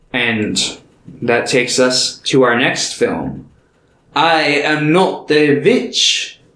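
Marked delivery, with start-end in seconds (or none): 4.2-6.3 Transylvanian-accented delivery. Announcing the next film's title as a joke: put-on Transylvanian accent. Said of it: "with the Transylvanian accent".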